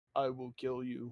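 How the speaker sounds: deep voice.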